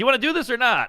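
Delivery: mock firm, blunt delivery. Retelling a woman's reply on the bed: imitating a blunt refusal. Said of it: "That's a great no".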